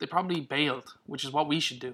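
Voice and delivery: ordinary delivery, nothing marked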